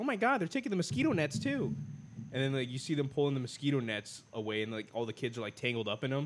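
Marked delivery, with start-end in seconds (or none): 0.0-1.7 high, panicked cartoon squeal. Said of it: "Peter or Lois is like".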